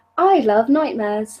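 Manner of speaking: put-on British accent. Asked to say a line in the most British way possible, put-on British accent. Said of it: "say "I love nightmares" in your most British way possible".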